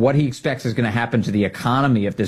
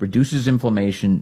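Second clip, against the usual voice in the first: normal talking voice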